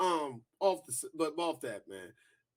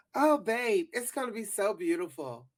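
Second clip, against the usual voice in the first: put-on independent woman character voice, pitched up; 5 semitones higher, 4 dB louder than usual. Retelling a scene from a show, imitating a woman's voice.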